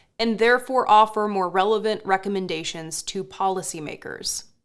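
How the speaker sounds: plain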